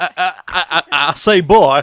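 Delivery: put-on overdone Southern American accent. Joking about a running bit done whenever someone stutters, in a Foghorn Leghorn accent. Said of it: "doing the Foghorn Leghorn accent".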